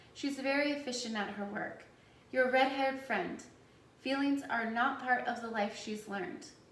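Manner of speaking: ordinary delivery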